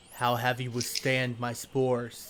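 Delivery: looming, imposing voice. Game master voicing a figure addressing the players, looming voice. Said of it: "You hear a looming voice".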